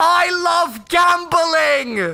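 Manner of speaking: mock, full-throated, shrill, very high shout. Retelling what a man one row behind yelled out, imitating someone shouting. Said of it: "he shouts at the top of his lungs".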